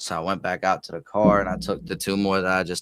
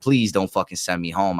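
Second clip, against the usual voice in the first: put-on begging voice. Retelling a talk with the boss about being sent home: imitating own begging. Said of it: "I'm begging her".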